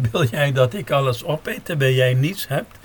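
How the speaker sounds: plain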